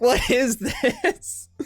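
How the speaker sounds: high, slow, drawn-out, laughing, baffled tone. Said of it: "And I'm like".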